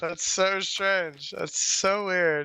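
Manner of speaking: slow sarcastic drawl with feigned amazement. Joking about enemies taking a fort too fast, sarcastic. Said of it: "We're being sarcastic".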